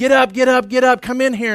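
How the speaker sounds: high, urgent, acted-out hollering yell. Retelling running through the house waking the family: retelling own yelling. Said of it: "I'm yelling at everybody".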